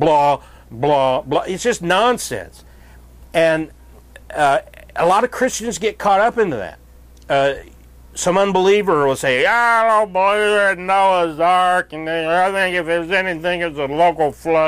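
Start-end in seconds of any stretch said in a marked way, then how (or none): 8.1-14.7 put-on drunk voice, much higher. Speaker mimics an unbeliever dismissing noah's ark; imitating a drunk. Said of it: "That's my imitation of a drunk".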